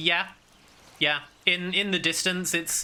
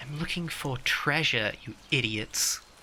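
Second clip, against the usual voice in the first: hushed, secretive whisper said right up close; 3 semitones lower than usual. Voicing a character who steps up close to the listeners, whispering. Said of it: "she just whispers".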